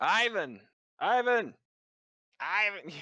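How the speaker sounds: tiny, high-pitched, faraway-sounding yell. Narrating the game, he voices a small snake calling to Ivan: tiny voice yelling from far below. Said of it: "such a tiny voice yelling from very far below you".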